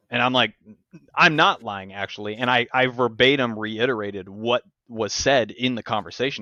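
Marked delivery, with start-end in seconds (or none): none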